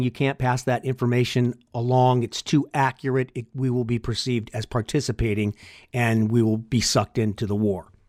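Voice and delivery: ordinary talk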